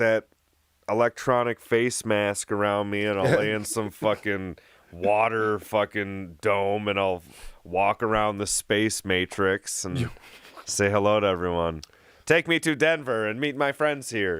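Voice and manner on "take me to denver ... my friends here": mechanical, pitched-up robot voice. Imagining walking around virtual reality and greeting everyone, robot voice. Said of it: "We all talk in robot voice".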